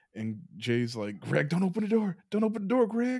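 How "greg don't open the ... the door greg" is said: full-throated, high yell, climbing in pitch. Telling a ghost story, acting out how she warned Greg: retelling a yelled warning. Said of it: "She yells that".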